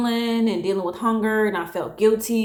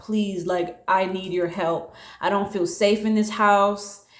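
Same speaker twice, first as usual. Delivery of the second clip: acted-out crying, tearful voice. Recalling calling him for help during a family situation, reenacting crying on the phone. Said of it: "I was calling him on the phone crying".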